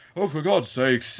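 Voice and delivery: cartoony villain voice with British accent. Criticizing a cartoonish villain, quoting one of his lines; villain's british accent. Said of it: "That was a British accent".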